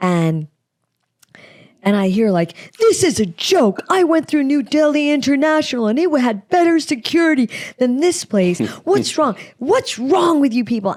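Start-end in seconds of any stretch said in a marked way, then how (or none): 2.8-11.0 mock, high-pitched, berating rant. Retelling a man berating a TSA worker at four in the morning, imitating a man berating someone. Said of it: "a guy berating a T S A person".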